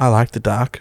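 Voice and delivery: imitated soft whisper. Parent retells their son speaking to a scared four-year-old in the dark; soft whisper. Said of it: "in a soft whisper voice".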